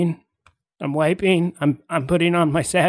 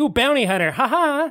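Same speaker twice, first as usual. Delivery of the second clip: hearty, playful, jovial joking, a bit higher; 8 semitones higher than usual. Demonstrating how to ask the line jokingly instead of accusingly; jovial. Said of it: "Say it jovially".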